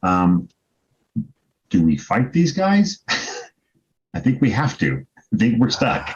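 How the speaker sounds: loud theatrical whisper. A player's character whispers into a companion's ear, whispered. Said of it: "then I whisper to Gorr's ear".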